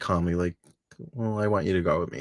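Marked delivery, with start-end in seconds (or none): none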